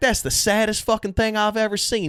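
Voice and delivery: put-on Southern American accent. Retelling what a cowboy-hatted guy from North Carolina said: imitating a Southern guy. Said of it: "that voice just".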